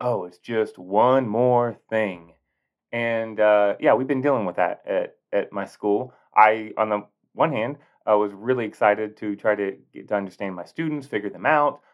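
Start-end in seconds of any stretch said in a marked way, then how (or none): 0.0-2.3 put-on disgust, louder and slower. A teacher describes how people usually say a common phrase; mock disgust. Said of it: "usually is said with disgust".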